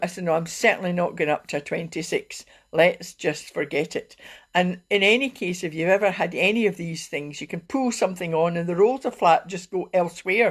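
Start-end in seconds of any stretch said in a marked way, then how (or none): none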